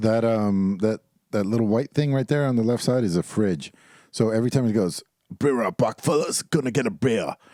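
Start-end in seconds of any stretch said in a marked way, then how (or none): 5.4-7.3 casual, offhand, called-out announcing voice. Imitating someone who announces getting a beer from the fridge: imitating a friend announcing a beer. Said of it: "credit for my impression".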